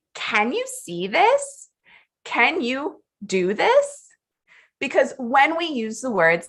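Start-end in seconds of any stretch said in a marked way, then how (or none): 0.2-4.1 slow delivery with pitch rising at the end. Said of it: "we are bringing in a rising intonation".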